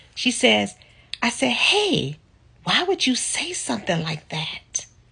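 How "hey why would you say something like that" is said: whispered speech. Retelling a shocked exchange with a woman, retelling a whispered question. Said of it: "I'm I'm whispering".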